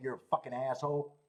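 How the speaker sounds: mock-muttered, mumbled under breath. Retelling what they said about a rude guy, retelling a mutter under breath. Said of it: "mumbling under my breath".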